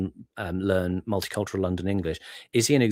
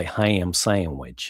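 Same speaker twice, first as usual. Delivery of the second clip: put-on east Texas accent. Showing an example from East Texas accent videos: East Texas accent. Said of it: "look up East Texas accents".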